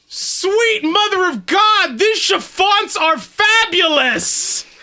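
very loud, high-pitched, booming voice. Voicing Ron's line after magical energy fills his larynx, very loud. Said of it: "you are fucking loud".

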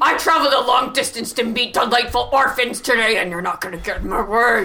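threatening voice. Answering a call to say something threatening to a caretaker: threatening. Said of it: "Just say something threatening".

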